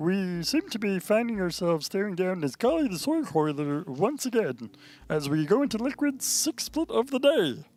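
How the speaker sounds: very high, slow, drawn-out female commentator voice. Speaker tries doing her voice, then says it doesn't sound right: imitating a woman's voice. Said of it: "does not sound like her".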